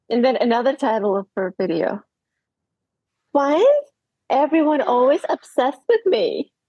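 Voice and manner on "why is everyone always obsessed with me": mock influencer voice, put-on reading style. Reading aloud a video title in a put-on voice: put-on voice reading her title. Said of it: "I can't help but read it in this voice".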